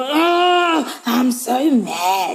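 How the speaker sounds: put-on very slow, cute little-kid grumbling complaint. Retelling how her son complains about his sister: imitating son saying he's mad. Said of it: "you're so cute".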